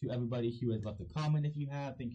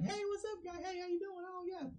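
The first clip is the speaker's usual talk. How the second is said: very high, gushing, over-friendly buddy-buddy tone; 4 dB quieter than usual. Imitating a wrestler acting like the best friend: imitating an overly friendly buddy. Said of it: "he's acting like the biggest, best friend".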